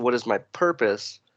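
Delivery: ordinary talk, nothing marked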